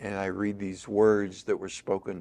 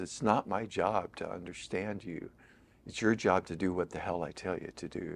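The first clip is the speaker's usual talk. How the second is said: soft, cold, mock venom-laced tone; 5 dB quieter than usual. Retelling a confrontation with a woman who locked eyes with the speaker, mimicking her venomous tone. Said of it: "with sort of venom in her voice".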